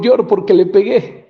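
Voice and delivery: ordinary talk, nothing marked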